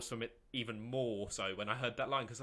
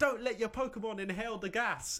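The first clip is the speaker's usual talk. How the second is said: very high-pitched yelling; 10 semitones higher, 4 dB louder than usual. Recapping a Pokemon scene, the speaker quotes a character warning everyone, imitating someone yelling. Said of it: "she's just yelling at everyone".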